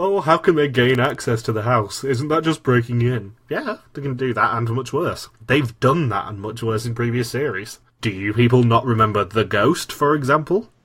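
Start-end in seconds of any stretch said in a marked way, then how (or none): 0.0-3.3 mock complaining. Mocking viewers who complained about the break-in: imitating people moaning. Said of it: "so many people moaning about the".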